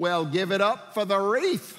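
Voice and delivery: loud, dry, heavy mock sarcasm. Retelling what she said as the car pulled into the driveway: imitating a sarcastic remark. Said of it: "she said so sarcastically".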